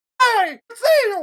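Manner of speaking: squeaked out, high and loud. Showing another speaker which cartoon voices they can do, in a Mickey Mouse voice. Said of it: "I could do Mickey Mouse".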